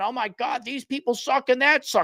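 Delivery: put-on New York accent. Talking about a car-review host, doing a Scotty Kilmer New York accent. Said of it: "I got my New York accent".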